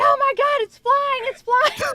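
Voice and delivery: very high, very loud, shrill, frantic panicked shout. Retelling pretending to chase a bug with a broom: imitating own panicked shout. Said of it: "And I'm like".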